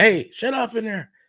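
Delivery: high, loud shouting.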